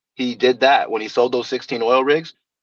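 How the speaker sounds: ordinary talk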